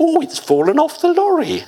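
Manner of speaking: squeaky, shrill comic voice, high and swooping. Retelling what he said to make a point, Bluebottle voice. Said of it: "he put on his best Blue Bottle voice".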